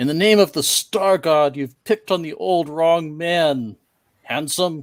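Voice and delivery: loud, high-pitched yell. Playing a character who rushes up to the monk during a fight, yelling. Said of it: "he rushes up to the monk and yells out".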